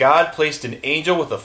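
plain reading voice

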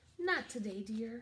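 with a sigh. Reading a story, the mother answers her little girl, sighing. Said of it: "her mother sighed".

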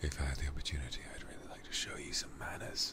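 unvoiced, teasing ASMR-style whisper.

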